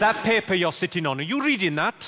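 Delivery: put-on Welsh-accented delivery. Speaker trying out practice phrases, in a Welsh accent. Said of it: "To do a good Welsh accent".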